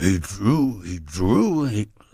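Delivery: slow, rough, gravelly rasping voice. Retelling what a man said while drawing a curve on a napkin: gravelly voice imitating Murray Salgo. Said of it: "I got a break character".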